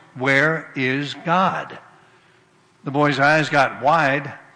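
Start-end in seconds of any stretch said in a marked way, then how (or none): 0.2-1.8 a bit louder, much slower. Retelling a story, the principal asks the boy again, a little louder. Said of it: "a little louder voice".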